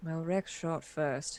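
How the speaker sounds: muttered quietly under breath. Voicing a character as a player runs straight at him: muttering under his breath. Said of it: "hear him say under his breath".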